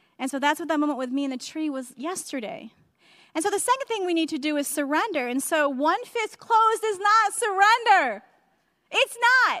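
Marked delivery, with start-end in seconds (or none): 5.3-9.6 shouting, higher and louder. Preaching that one closed fist is not surrender: shouting. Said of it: "sorry I just shouted".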